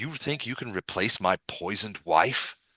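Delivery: perfectly calm, hushed, soft voice. Voicing a character who smiles at the players: very calm voice. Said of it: "and it's very calm".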